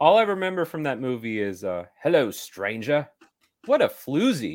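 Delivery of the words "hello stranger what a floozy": rough put-on actor voice, swooping pitch, not quite nailed. Quoting a line remembered from the movie: not great Jude Law impression. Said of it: "Wasn't a great impression".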